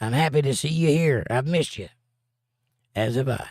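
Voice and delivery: ordinary talk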